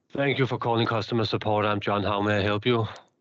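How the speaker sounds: flat, disengaged, low-effort customer service agent voice. A presenter shows how a support agent's greeting is sometimes actually said, disengaged. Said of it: "sometimes it's actually said like this".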